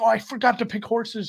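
put-on play-acted high, loud yelling kid voice. Parent retells the daughter yelling during a horse race on TV, imitating daughter's yelling. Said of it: "my daughter's yelling".

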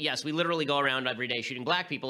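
plain

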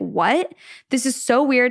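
slow, stunned, embarrassed disbelief. Retelling a wife meeting her catfish, her husband; acting out shocked embarrassment. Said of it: "she's just shook and she's super embarrassed".

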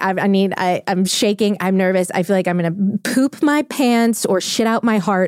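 normal talking voice

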